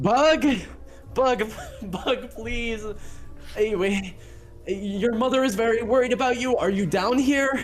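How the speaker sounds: very high calling out. Voicing a bodyguard calling down a drain pipe: Jofus calling down a drain pipe. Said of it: "your bodyguard, Jofus, is looking down this drain pipe. He goes".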